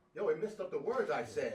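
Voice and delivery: ordinary delivery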